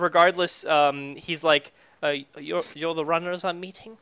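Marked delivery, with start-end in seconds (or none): 2.4-3.8 soft, bashful, sheepish yet mischievous and impish. In a role-play, voicing a character who meets the runners: sheepish, impish voice. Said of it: "He's like really sheepish and impish".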